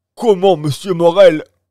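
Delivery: strangled, choked cry, very high and very loud. Reading a novel aloud, the narrator gives a sailor's question to the shipowner in a strangled voice. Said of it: "d'une voix étranglée".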